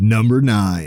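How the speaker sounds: big-screen movie-trailer announcer delivery. Asked to say it again, the speaker repeats the number in a movie announcer voice. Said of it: "It's a fucking movie star voice or uh, movie announcer voice".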